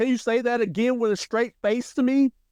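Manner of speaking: high, smug, mocking tone. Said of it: "he's basically like".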